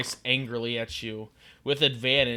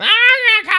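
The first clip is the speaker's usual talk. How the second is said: very high, very loud, shrill, furious lizard-creature war cry; 13 dB louder than usual. Narrator voices a lizard-like creature raising his sword at the party, angry lizard-folk cry. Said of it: "raise his sword at you angrily".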